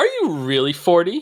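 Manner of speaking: loud, high-pitched put-on little kid voice, blurted out. Retelling a daughter's question at the grocery store: imitating a loud question. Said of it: "she just asks very loudly".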